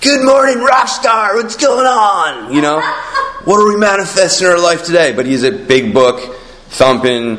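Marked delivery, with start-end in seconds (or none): 0.0-5.1 very high, rapid hair-metal rocker patter. Describing how a member of a famous 80s hair metal band talks: imitating an 80s hair-metal guy. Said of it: "he talks like that guy".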